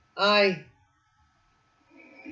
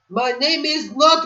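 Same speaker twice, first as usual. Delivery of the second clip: loud, high irritated outburst. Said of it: "ticked him off so much".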